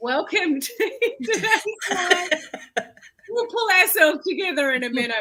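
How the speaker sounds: very high, crying with laughter, laughing helplessly. Welcoming viewers to the live while losing it: laughing helplessly while talking. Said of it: "I'm literally crying".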